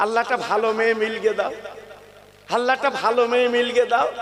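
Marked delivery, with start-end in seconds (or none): none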